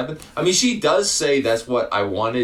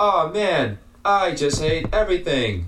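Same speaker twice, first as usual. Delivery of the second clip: flat, lifeless, emotionless deadpan, slightly high; 6 semitones higher than usual. Doing their best to impersonate the movie's male lead. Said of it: "I'll do my best to impersonate him".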